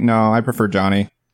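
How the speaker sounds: ordinary talk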